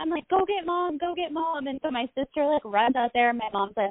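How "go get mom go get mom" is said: mock tearful tone, higher and quieter. Retelling waking up in pain as a child: imitating own past crying.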